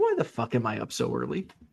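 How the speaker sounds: voice of a dog. Voicing the dog's thoughts about being up early: voicing Ernie the dog's thoughts. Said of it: "He's like".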